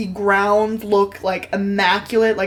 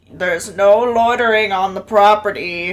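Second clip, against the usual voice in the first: put-on elderly male old man voice. Narrating a scene, the speaker voices a man over an intercom: old man's voice. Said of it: "you just hear an old male's voice just go".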